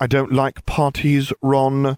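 patience worn thin but held in, slightly high. The narrator answers ron, who keeps trailing behind him, with forced patience. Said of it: "I explained with forced patience".

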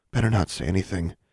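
tense, tight, frightened murmur. Anna speaks from behind Alexandra and David during a scolding, tight terrified murmur. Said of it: "murmured in a tight voice".

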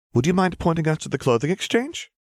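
very high, forced, fake bubbly sing-song cheer. Himiko speaks to the blue-haired girl, hiding that she doesn't enjoy this, fake bubbly tone. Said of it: "The fake bubbly tone in her voice".

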